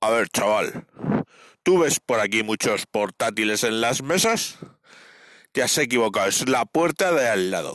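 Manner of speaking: deep, low, bass-heavy voice. Retelling what a bartender told a young customer; deep voice. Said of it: "con voz profunda le dijo".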